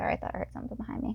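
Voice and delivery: startled, fast, voiceless whispered aside.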